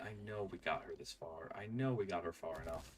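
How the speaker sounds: plain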